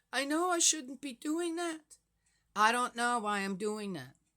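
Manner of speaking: crying through the words. Retelling how a woman broke down when asked why, imitating someone crying. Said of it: "she says, crying".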